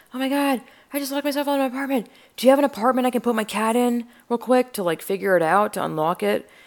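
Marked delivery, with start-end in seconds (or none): 0.1-4.8 high, rushed, frantic, freaked-out panicked babble. Retelling being locked out and asking a passerby for help, retelling freaking out. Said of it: "I'm freaking out".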